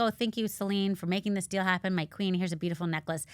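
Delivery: ordinary delivery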